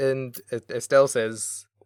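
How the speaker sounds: normal talking voice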